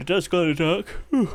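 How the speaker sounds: words stretched and spoken through a yawn. Reviewing an item after talking quickly, speak while starting to yawn. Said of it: "I started to yawn".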